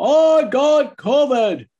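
booming put-on voice. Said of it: "he booms a voice".

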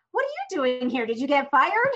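playful, jokey delivery. Retelling what they said when someone walked in unexpectedly, jokingly. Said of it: "I jokingly said".

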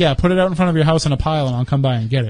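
normal talking voice

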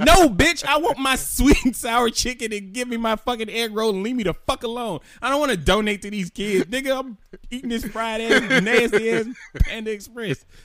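high-pitched, loud, furious, fed-up rant.

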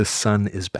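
put-on woman's whisper. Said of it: "You can hear a whispering".

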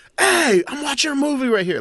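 high-pitched mock yelling.

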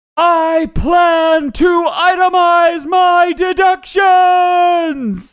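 very high, very slow, shrill, drawn-out full-volume holler. Playing a character facing archers in a game: yelling as loud as possible. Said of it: "I yell as loud as I can".

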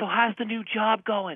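high, slow, idle chatty woman's voice. Retelling a woman chatting behind during a movie: imitating a woman chatting. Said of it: "hen behind me go, like".

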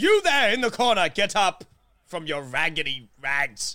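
loud, bold, courageous delivery. Their character swings open a door and calls to a figure in the corner, brave voice. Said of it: "like a brave voice".

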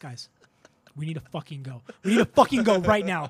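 acted urgent conviction. Retelling finding blood in a sandbag, the speaker reenacts urgent conviction. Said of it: "you heard the conviction in my voice".

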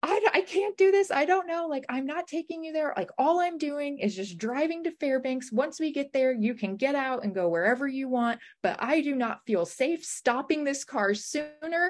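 high-pitched, tearful, crying panic. Retelling driving someone to fairbanks while freaking out and crying: retelling tearful panic. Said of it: "I just started like freaking out and crying".

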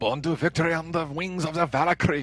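put-on heavy, theatrical German accent. Quoting a dramatic line during a movie discussion, in a thick german accent. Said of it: "You say anything with a thick German accent".

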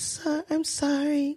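acted weak, faint voice. Retelling a character's repeated apology: imitating a faint voice. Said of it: "in that faint voice".

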